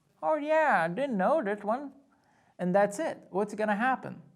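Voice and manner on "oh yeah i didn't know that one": put-on accent drifting into Indian accent. Acting out a driver asked about a gun at the Canadian border, accidental Indian-sounding accent. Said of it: "That sounded more like an Indian accent".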